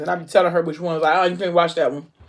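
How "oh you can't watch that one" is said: ordinary delivery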